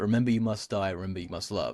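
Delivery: ordinary talk, nothing marked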